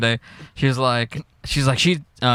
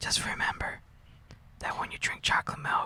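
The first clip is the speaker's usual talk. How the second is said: very quiet, hushed whisper. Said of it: "he whispers into Bart's ear".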